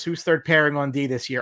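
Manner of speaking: ordinary talk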